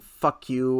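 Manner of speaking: ordinary delivery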